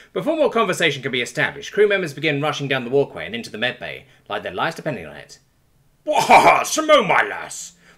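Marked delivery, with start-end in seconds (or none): 6.0-7.7 very loud, high, slow, drawn-out bellow. Reading a story aloud, the captain greets a returning crewmate: bellowing. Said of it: "the captain bellows out".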